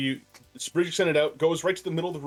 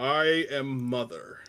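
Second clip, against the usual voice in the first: deep booming computer voice. Describing a computer called Mother, then voicing it: deep booming Mother computer voice. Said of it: "deep, booming computer voice".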